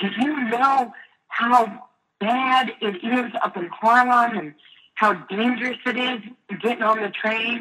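high, drawn-out, scolding yell. Retelling how her mom reacted to her trip to harlem: imitating her mom yelling. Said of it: "she starts yelling at me".

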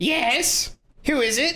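very high, slow, drawn-out goblin creature voice. Game narrator voicing whoever answers the knocked-on door, in a goblin-like creature voice. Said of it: "Is that a goblin voice or a Kenku voice?".

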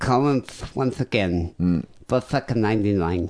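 mocking put-on impeded speech. Imitating a voicemail caller's voice: imitating caller's speech impediment. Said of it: "It's a bit of a speech impediment".

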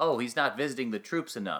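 ordinary delivery

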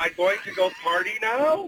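statement ending in a rising question lift on now. Mocking how the younger generation talks: imitating a rising question lilt. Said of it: "that lilt in the voice".

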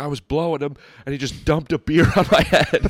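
put-on high-pitched, screaming girl's outburst. Retelling a girl screaming at a boy: imitating a girl screaming. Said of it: "she's screaming at him".

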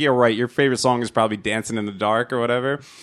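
ordinary delivery

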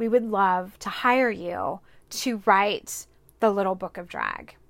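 ordinary delivery

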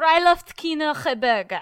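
furious, very loud, angry barking outburst in German. Asked by another speaker to do an angry one: mock angry German delivery. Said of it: "German angry".

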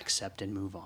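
hushed whisper. Talking with a co-host about the shop gnomes, whispering. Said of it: "not sure why I'm whispering about the shop gnomes now".

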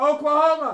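mock announcer yell. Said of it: "You're getting louder".

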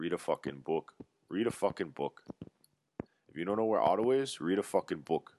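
put-on Canadian accent.

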